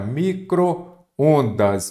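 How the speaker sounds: micro-ondas stretched out very slowly. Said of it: "o que que você observa aqui".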